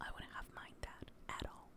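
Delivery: soft, hushed, breathy whispered aside. A speaker reviewing a musical episode repeats an aside: whispering. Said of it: "I don't know why I'm whispering that".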